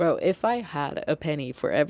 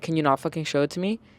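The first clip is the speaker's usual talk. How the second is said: mimicked rude voice with attitude. Retelling a customer interrupting an explanation: imitating a customer with attitude. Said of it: "Not with that attitude".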